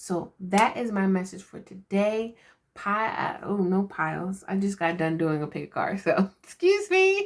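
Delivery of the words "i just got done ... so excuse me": laughing, giddy and tired-sounding. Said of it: "So I am laughing and being giddy".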